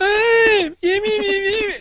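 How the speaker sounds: shrill, very high, very drawn-out, slow caricature voice. Asked for his voice caricaturing his girlfriend, he does it: imitating girlfriend in high pitch. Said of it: "I usually just go stand high pitch".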